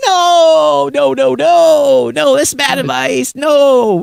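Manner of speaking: very high, very slow, creaky drawn-out yell. Retelling own reaction to bad advice on the phone: retelling yelling at phone. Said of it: "I'm yelling at my phone".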